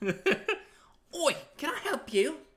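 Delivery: very high, shrill, bad put-on British accent. Workshopping a character voice on the spot, in a horrible British accent. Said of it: "delve into my horrible British".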